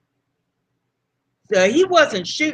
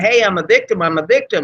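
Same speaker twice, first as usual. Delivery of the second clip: ordinary talk, nothing marked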